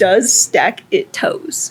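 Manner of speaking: very slow, drawn-out, anglicized English accent. Reading a Spanish phrase aloud as asked, English accent. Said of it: "In, in an English accent?".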